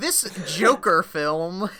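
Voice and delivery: put-on loud old-fashioned newscaster voice. Mocking their own phrasing about a tweet, boomer newscaster voice. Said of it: "I sounded like that was like the most like boomer newscaster".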